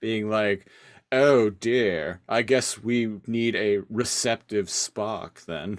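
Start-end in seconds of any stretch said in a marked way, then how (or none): 1.1-5.8 cheeky, sassy, quipping delivery. Talking about Guilty Spark sassing Tankor, act out his line in a mock-sassy voice. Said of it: "He's given some sass".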